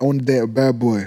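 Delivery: ordinary delivery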